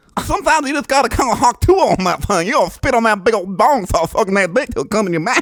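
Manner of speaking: very high, blustery cartoon rooster voice. In a voice guessing game, performing for the other player in a Foghorn Leghorn voice. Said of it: "that is uh, Foghorn Leghorn".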